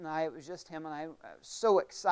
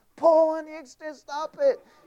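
shrill, very loud, high-pitched scream; 12 semitones higher, 10 dB louder than usual. Speaker reenacts screaming at a man pulling an extension cord, retelling a scream. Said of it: "Now I'm screaming at him".

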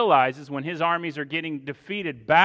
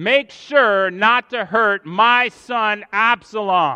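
play-acted, very slow, loud, drawn-out carrying yell; 5 semitones higher, 6 dB louder than usual. Retelling the king's order to his commanders: imitating someone screaming. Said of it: "is screaming at the top of his lungs".

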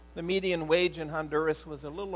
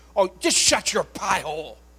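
put-on very loud, harsh, cross, scolding grandma voice; 4 semitones higher, 8 dB louder than usual. Recalling how Grandma snapped at Grandpa when mad: imitating grandma's angry scolding. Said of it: "just the way she'd say it".

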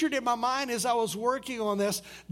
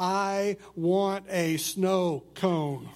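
put-on very slow, firm, no-nonsense stern voice; 4 semitones lower than usual. Retelling what someone suddenly said, imitating a very stern voice. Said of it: "in this very stern voice".

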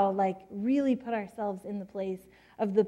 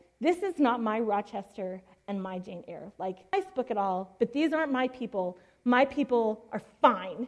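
normal talking voice

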